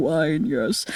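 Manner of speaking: put-on soft, low murmur with a Southern accent. Describing the character Blanc, the speaker imitates his southern accent. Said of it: "He's also got a southern accent".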